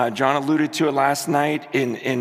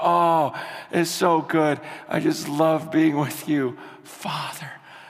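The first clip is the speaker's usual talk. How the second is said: put-on tearful, crying voice. Retelling own prayer to God as Father: retelling own crying prayer. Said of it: "I'm just crying".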